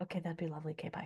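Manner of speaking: very soft, quiet speech. Showing a way of announcing a change that fails: saying it very quietly. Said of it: "So you sort of say it very quietly".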